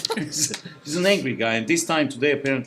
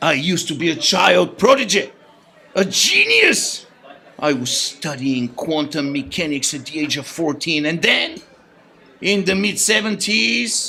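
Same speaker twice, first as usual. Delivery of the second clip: put-on angry man's voice; 2 semitones higher, 4 dB louder than usual. Voicing a caller's message against trendy toys: Angry Walter voice. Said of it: "Here's Angry Walter".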